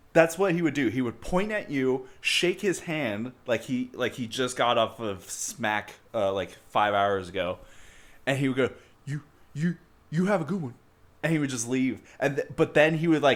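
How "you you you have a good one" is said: pitched-up stammering, first word repeated. Retelling how a man would point at you and leave, stammering impression. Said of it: "I still do an impression of him".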